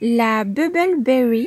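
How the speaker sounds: bubble berry pronounced the English way. Showing a strawberry label, the speaker reads the variety name in an English accent. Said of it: "Désolée pour l'accent anglais".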